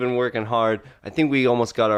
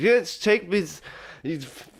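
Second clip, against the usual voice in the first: mock slurred speech, higher pitch; 7 semitones higher than usual. Retelling a movie scene where a woman answers a driver: imitating slurred speech. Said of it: "she is slurring her speech".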